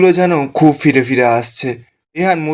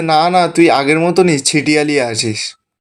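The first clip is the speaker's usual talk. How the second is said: normal talking voice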